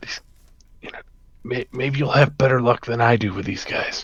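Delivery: quiet whispering. Leaning over to another character in the game, in character: whispering. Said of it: "whisper to Yuri".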